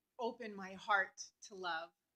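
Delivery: ordinary delivery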